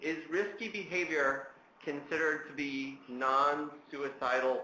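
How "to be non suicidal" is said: normal talking voice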